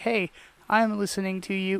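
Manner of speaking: ordinary talk, nothing marked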